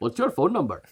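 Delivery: soft fake Dutch accent that sounds Indian. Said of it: "That was more Indian".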